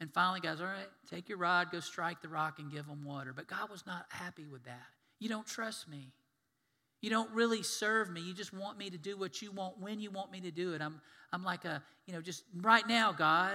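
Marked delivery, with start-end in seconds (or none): 5.2-13.6 put-on frustrated voice. Retelling the story, the speaker voices God, mock-frustrated. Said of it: "And he was frustrated".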